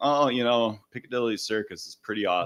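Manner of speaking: put-on unimpressed tone. Describing a comedian's father taken to the Taj Mahal: mock-nonplussed answer. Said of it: "just give nonplussed answers".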